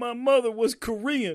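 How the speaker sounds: very high, loud, bad fake crying and sobbing. Retelling an actor's scene, imitating fake crying. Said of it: "he's fake crying and he just goes".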